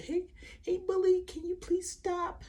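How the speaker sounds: very high, shy, timid, meek little voice. Showing students the wrong way to refuse a bully: mock shy timid voice. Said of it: "You can't be shy and timid".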